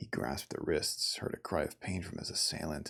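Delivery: ordinary delivery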